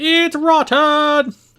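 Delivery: very loud, high, shrill, furious angry shout. Imagining Gordon Ramsay inspecting a restaurant owner's seafood, doing a Gordon Ramsay shout.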